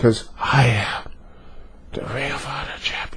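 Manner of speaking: put-on whisper. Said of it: "and then he says / why are you whispering".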